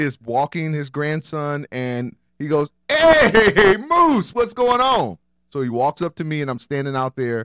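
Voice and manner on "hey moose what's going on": put-on Jamaican accent, pitched very high and loud. Retelling a neighbor greeting him as he gets out of the car, jamaican accent. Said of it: "Sounded Jamaican, by the way".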